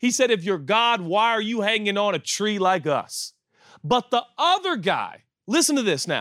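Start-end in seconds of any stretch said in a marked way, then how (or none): 0.3-3.3 sarcastic, brash, jeering tone. Retelling a crucified criminal's taunt: imitating a sarcastic, brash taunt. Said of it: "he was a little sarcastic and brash".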